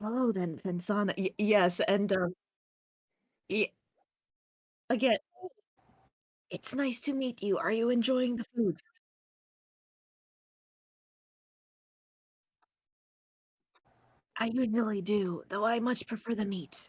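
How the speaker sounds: whispering in a character voice. Voicing a character who answers in a quiet chat: whispering in character. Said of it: "they're both whispering to each other".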